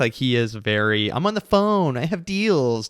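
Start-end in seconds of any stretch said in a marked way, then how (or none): 1.1-2.9 whiny, pitched-up put-on voice. Mocking an actor's phone scene in Uncut Gems: imitating his whiny voice. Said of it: "doing his whiny voice".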